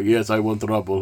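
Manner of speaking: English spoken with a fake Russian accent. Retelling a story, quoting a German guy's reply, in a fake Russian accent. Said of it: "I don't know why I'm making him sound Russian".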